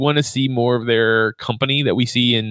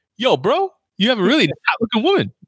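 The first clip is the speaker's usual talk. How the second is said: high-pitched, sing-song delivery; 10 semitones higher than usual. Retelling what a raccoon said at an art gallery: bad Luis impression. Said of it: "That was my bad impression".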